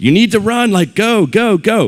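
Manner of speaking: very high, loud, drawn-out scream at top volume. Retelling a baseball story where the coach, teammates and parents yelled at the batter: imitating people screaming. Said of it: "they are screaming at the top of their lungs".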